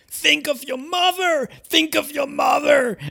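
shrill, very high, drawn-out yell. Retelling what a girl yelled at a man on chat roulette: imitating someone yelling. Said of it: "and she yelled".

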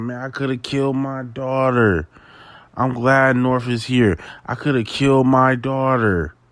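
weeping, sobbing, tearful, breaking-down voice. Retelling a speaker on stage: imitating someone crying. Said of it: "he's on stage crying like".

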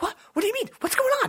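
put-on very high, very loud, defensive yelp, American accent. Mocking an actor's American accent, acting defensive: Tom Holland's defensive American accent. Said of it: "His American accent, I feel like he's always like".

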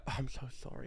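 fake apologetic tone. Showing how to pretend to apologize to others: fake apologetic tone. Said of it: "You have to pretend to be like".

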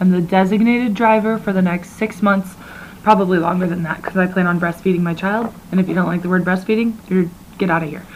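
normal talking voice

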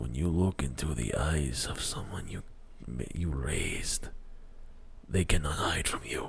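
low, soft, whispered villain voice. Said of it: "Draco's like".

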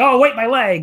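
shrill, high, loud cry of faked pain. Mocking how a wrestler clutches his leg: imitating Kota with a hurt leg. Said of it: "And then he's like".

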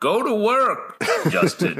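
slow, lordly, commanding tone, very high and drawn out. Imitating Khonshu giving an order: imitating Khonshu. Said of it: "you hear him all the time, right? Being like".

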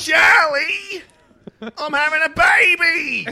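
exaggerated, very high, shrill, loud Australian accent. Mocking how certain characters talk, the speaker does a mock Australian accent. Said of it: "the ones that did fucking talk like this".

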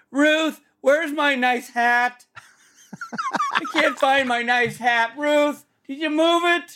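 very high-pitched crying out. As a creature luring Ruth into the forest, call to her, mimicking the cry of Rob Benedict. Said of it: "if it was mimicking the cry of Rob Benedict".

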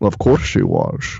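put-on gruff, rough-edged, growled Scottish accent. Acting out Sean Connery looking back at Nick Cage and answering, do a Sean Connery impression. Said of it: "Sean Connery looks back at him and says".

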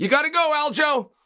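gentle, calm, mild, unprovocative, non-hostile tone. Portraying the tone of a remark telling aljo to go: re-enacted calm, non-hostile tone. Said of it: "It wasn't overly loud. It most certainly wasn't provocative. It wasn't rude and or mean".

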